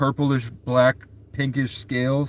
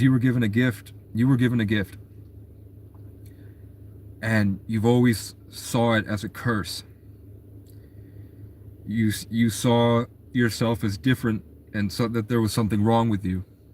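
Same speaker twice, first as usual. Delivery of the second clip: put-on earnest, serious, grave, weighty delivery; 2 semitones lower, 3 dB quieter than usual. Retelling what the character told him, saying the line more seriously. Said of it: "But I say it more serious".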